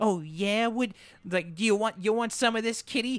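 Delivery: tiny, twee, very high-pitched voice. Describing a show's characters, imitating Killer in a twee little voice. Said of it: "this twee little voice of just like".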